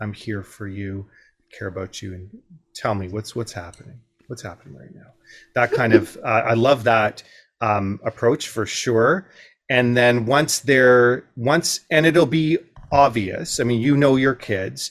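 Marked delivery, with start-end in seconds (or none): 0.0-5.1 gentle, calm jazz radio-host voice, quieter, faster. Showing a parent how to calm an upset child, in a jazz radio host voice. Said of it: "put your jazz radio host voice on".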